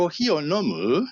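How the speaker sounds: rising pitch on last syllable of nomu. Japanese lesson on asking a question, pitch rising at end of nomu. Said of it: "tem que subir no fim".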